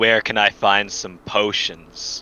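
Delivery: demon character voice. A roleplaying player, in character, pulls a man closer and questions him, booming voice. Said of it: "with with my booming voice".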